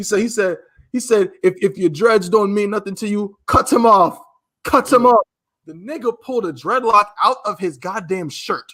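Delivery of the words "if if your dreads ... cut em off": higher put-on strong Jamaican accent. Retelling what a man on the train told a kid: imitating a strong Jamaican accent. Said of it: "with his strong Jamaican accent and said".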